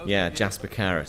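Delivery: ordinary talk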